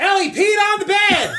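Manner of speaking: very high, shrill shriek. Retelling what Julie did on entering the bedroom: imitating a scream. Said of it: "she screams".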